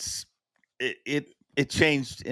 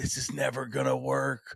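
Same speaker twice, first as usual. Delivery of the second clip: put-on whisper, quieter; 5 dB quieter than usual. Retelling what another speaker said before a broadcast: imitating someone whispering. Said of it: "I remember you whispering".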